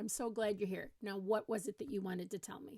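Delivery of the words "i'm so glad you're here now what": plain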